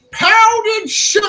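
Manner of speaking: yelling at full volume. Standing at the ship's steering wheel in character: shouting at the top of lungs. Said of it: "I shout at the top of my lu-, my lungs".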